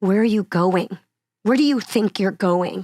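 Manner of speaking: mock furious, angry, demanding tone. Retelling what the mom character said in a play; imitating an angry question. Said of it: "so angry".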